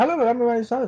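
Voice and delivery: very high, rapid-fire, rattled-off chatter. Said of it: "she started to just talk really, really fast".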